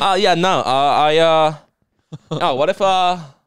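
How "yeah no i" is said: very slow, hesitant stammer, stumbling over drawn-out uhs. Acting out a film director's reply in a podcast bit: Wes Craven impression. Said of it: "I'm nailing this Wes Craven impression".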